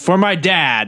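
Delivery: high-pitched, shouted battle cry. Lunging at an enemy with a rhino horn, yelling a battle cry. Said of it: "And then I'm gonna yell".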